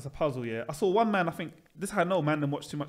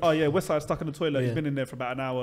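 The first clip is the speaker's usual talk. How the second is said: put-on offhand, casual, matter-of-fact tone; 3 dB louder than usual. Retelling how someone casually broke news: imitating an offhand, casual delivery. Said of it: "It was a regular occurrence".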